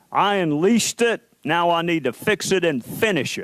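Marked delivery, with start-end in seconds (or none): none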